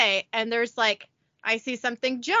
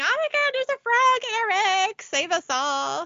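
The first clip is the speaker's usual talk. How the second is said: shrieking, very high-pitched screaming; 10 semitones higher than usual. Retelling spotting a frog in the house: imitating own screaming. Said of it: "so I'm screaming".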